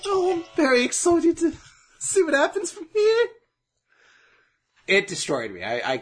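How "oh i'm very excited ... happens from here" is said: very high, quivering put-on character voice. Imitating someone from the season being watched: Winnie the Pooh-like voice. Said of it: "this Winnie the Pooh-like voice".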